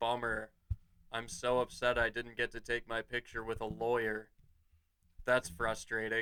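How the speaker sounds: put-on flat deadpan tone. Retelling what a brother said to a man's face, in mock deadpan. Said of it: "that exact deadpan".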